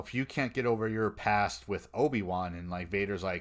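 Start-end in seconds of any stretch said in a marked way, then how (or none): none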